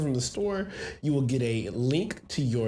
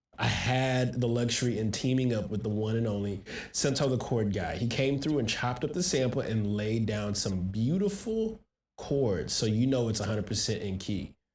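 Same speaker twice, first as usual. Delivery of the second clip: plain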